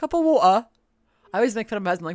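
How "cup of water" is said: very loud, high-pitched put-on British accent. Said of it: "He sound British".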